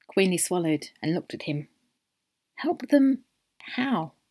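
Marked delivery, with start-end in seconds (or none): 2.6-4.1 small, hesitant little voice, pitched up. Narrator reads Queenie finally asking the short man a question in a small voice. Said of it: "she finally asked in a small voice".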